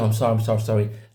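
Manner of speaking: put-on nervous, apologetic tone. Retelling apologizing during a driving test: imitating own nervous apology. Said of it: "I kept getting nervous".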